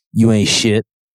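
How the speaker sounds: taunting, hissed stage whisper, close and intimate. Imagining a star handing out a trophy: imitating Michael Jordan whispering. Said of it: "always whispering to the guy".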